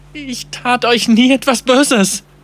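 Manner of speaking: very high, quavering, shaking, trembling voice. Narrator reads Tudre speaking, in a trembling voice. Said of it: "sagte Tudre mit zitternder Stimme".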